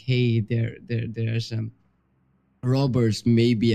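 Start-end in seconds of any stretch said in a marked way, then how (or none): none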